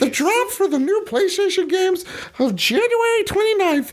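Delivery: very high-pitched cartoon character voice. Announcing the weekly game pick in a Mickey impression voice. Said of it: "You thought this voice was over?".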